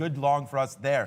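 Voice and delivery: ordinary talk, nothing marked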